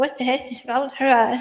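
plain

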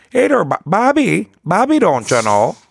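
put-on very high, sing-song, swooping Wisconsin accent. Recalling how Bobby's mom talked on Bobby's World, in Bobby's World mom's Wisconsin accent. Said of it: "They were from Wisconsin".

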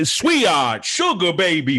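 put-on Italian-American accent. Quoting a line from the trailer: Oswald Cobblepot Italian-American accent. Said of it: "Italian ac-, American accent".

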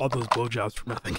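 whispering. Quoting a film character's line after naming it: imitating a whisper. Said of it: "She whispers".

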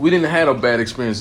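ordinary delivery

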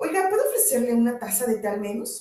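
plain

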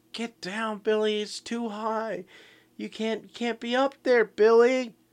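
shrill, very high, loud scream. Speaker retells a woman screaming at someone up on rocks, imitating a scream. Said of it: "and she's screaming".

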